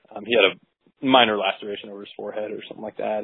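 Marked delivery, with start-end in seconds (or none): none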